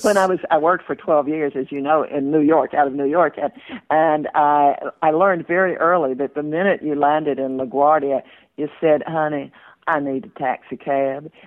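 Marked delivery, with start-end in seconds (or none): 9.1-11.2 put-on Southern accent, quieter, slower. Recalling landing at LaGuardia and asking for a cab, put-on Southern accent. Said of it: "So I really honed my Southern accent".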